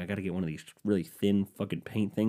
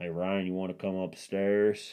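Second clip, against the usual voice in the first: put-on Southern American accent. Retelling how a man called the speaker upstairs, in a put-on Southern accent. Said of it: "I'm gonna give him a Southern accent".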